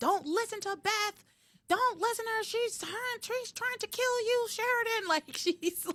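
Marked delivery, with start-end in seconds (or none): 0.0-5.1 mock very high-pitched, shrill yelling. Retelling a scene where a character yells from her room: imitating Edna yelling. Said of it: "she just starts yelling not to listen to".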